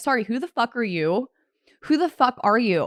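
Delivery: plain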